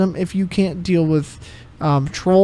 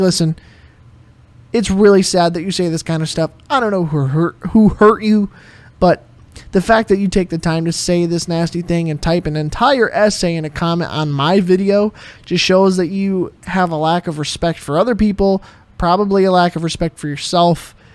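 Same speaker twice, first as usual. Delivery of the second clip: ordinary talk, nothing marked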